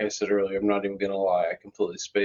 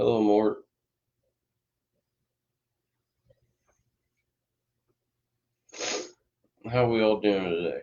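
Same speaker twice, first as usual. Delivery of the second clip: talking with mouth full, chewing. Speaker greets Mort while munching on French fries, talking with a mouth full. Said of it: "I'm munching on French fries".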